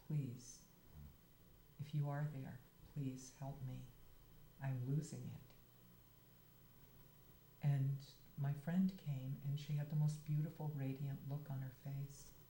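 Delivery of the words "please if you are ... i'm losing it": plain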